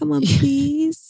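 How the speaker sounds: acted, sweet, very high cutesy pleading voice. Retelling how she begs her partner for sex: imitating cute begging. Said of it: "cutely begging too".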